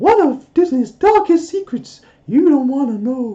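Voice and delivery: very high, loud, squeaky cartoon voice. Trying a character voice on a line about Disney, Mickey Mouse voice. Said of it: "try and do a Mickey voice".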